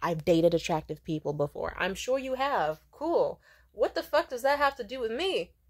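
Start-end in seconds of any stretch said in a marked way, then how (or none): 0.0-1.7 mock smug, arrogant, talking-down condescension. Acting out a dating prospect's reply to someone confident, mock-smug, arrogant tone. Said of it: "smugly and arrogantly, kind of condescendingly".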